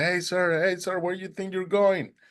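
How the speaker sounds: mock yelling, high pitched. Retelling how a man with five kids stopped him: imitating someone yelling. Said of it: "he started yelling at me".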